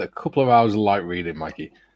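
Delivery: ordinary talk, nothing marked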